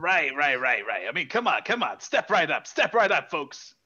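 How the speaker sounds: put-on New Jersey accent. In an improvised scene, calling out to folks in a New Jersey accent. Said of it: "It's kind of got this sort of voice going on".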